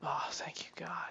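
soft unvoiced whisper, under the breath, sounding relieved.

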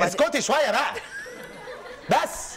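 shouting. Near the end of an episode, the speaker to a woman present: yelling. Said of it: "انت ليه بتزعقلي؟".

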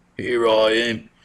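put-on British accent. Introducing a Portuguese historical figure, the speaker answers in a British-accented Prince Henry the Navigator voice. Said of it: "he's not British. I don't know why he talks like that".

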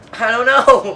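loud, high-pitched yelled protest.

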